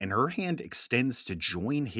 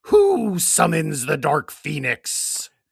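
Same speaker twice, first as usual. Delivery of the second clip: booming, huge, very loud screaming; 4 semitones higher, 9 dB louder than usual. Narrating a figure forming in the sky as it screams out, Dark Phoenix screaming voice. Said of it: "it screams out".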